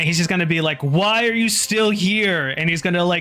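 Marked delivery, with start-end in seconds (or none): 0.8-2.5 exasperated, annoyed snarling tone. Voicing a character who snarls at a player to leave: exasperated snarling tone. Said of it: "an exasperated kind of, like, snarl on his face".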